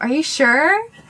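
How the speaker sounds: put-on gentle, concerned, heartfelt, caring tone. Retelling how a thrift store girl asked if they were okay, imitating a caring tone. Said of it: "just the way she said it, like she cared so much".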